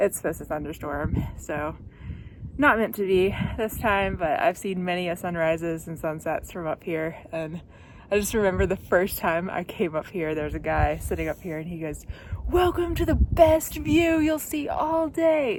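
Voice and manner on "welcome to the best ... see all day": mock very high, thrilled, eager, enthusiastic voice. Retelling a hiker's greeting at a mountain viewpoint: imitating someone enthusiastic. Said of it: "he was so enthusiastic".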